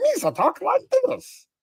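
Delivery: very high, squeaky, swooping alien voice. Describing how a Star Wars character talks: Jar Jar Binks voice. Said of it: "he's the dragon that talks like this".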